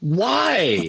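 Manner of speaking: high, drawn-out hollering yell. Retelling yelling at couples buying movie tickets: imitating own past yell. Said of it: "I would yell".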